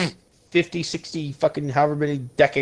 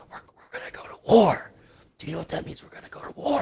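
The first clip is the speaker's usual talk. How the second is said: put-on creepy, unsettling hushed whisper; 4 semitones higher than usual. Acting out a president talking to Russia: imitating Joe Biden creepy whispering. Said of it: "get creepy and start whispering".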